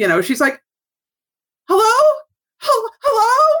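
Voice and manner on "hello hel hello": put-on very high, hammy, frantic, overacted screaming. Retelling an actress screaming into the phone: imitating an actress screaming. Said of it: "Like, screaming".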